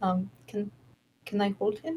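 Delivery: very quiet, regretful. A player speaks in character at the table; very quiet, almost regretful. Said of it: "very quietly, almost regretting her words".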